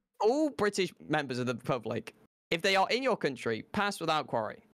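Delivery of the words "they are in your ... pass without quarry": normal talking voice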